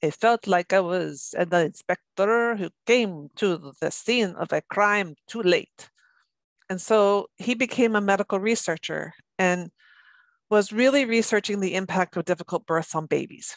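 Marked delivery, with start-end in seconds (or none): 0.0-5.9 put-on heavy Italian accent. Quoting a doctor met at a fetal brain conference: Italian accent. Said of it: "in his very Italian accent".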